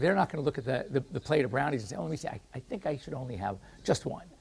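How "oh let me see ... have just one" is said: done in a dog voice. Describing a dog facing a plate of brownies: dog impression. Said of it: "It's a great dro-, dog impression".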